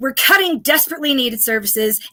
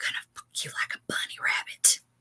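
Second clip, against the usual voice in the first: hushed, breathy, very quiet whisper, barely voiced. Retelling what a man said first thing on the phone before a date, whispering. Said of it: "he whispers".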